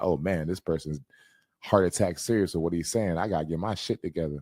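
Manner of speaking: normal talking voice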